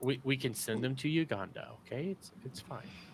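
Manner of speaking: put-on patronizing calm voice. Repeating own earlier words to the group: imitating own patronizing calm voice. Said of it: "she says my patronizing voice".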